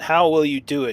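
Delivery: irritated, demanding tone. Narrator voicing a character's reply in a story, annoyed. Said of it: "he says with an annoyed voice".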